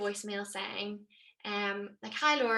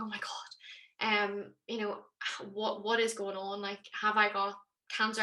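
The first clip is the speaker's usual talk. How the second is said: ordinary talk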